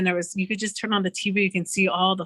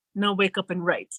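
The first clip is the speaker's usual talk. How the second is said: mock stern, loving grandmotherly voice. Retelling what a woman told her in a dream, in a mock loving-but-stern grandma voice. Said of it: "almost like a grandma, loving but stern voice".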